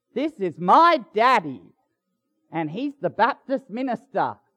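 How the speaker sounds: bursting with pride. Retelling a daughter introducing her daddy to a passerby, imitating someone proud. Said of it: "she said it so proudly".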